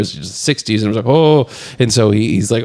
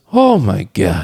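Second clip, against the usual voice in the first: put-on voice of an old guy, exclaiming; 3 semitones lower than usual. Retelling a movie scene, imitating the old delivery guy looking up. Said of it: "this old guy just looks up... he goes".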